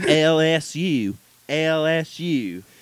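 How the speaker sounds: very slow, stretched-out fake Southern drawl. Mocking a new coach's press conference: imitating Brian Kelly's fake Southern accent. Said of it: "that fake Southern accent he threw on".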